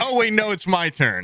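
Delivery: fed-up dad voice, pitched very high. Retelling the dad interrupted while telling a story: imitating annoyed dad. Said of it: "my dad gets so pissed when I do that".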